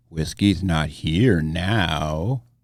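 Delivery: very deep, menacing, ominous voice, drawn out. In a podcast skit, a mystery voice answers the host calling for whiskey; ominous voice. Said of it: "There was an ominous voice".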